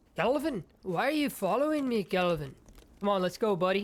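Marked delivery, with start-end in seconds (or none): 0.1-2.5 put-on Scottish accent slipping in. Playing a game, the speaker calls to calvin, who keeps following: scottish accent. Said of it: "I kind of get into a Scottish accent".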